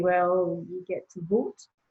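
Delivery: sheepish, subdued voice. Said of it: "you kind of sheepishly say".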